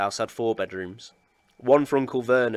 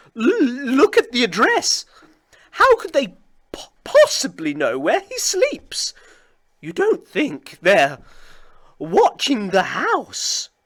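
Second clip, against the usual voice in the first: very high, trembling, swooping voice, "look" drawn out; 13 semitones higher, 5 dB louder than usual. Reading a novel aloud, voicing Aunt Petunia's line in a quivering voice. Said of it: "saying in a quivering voice".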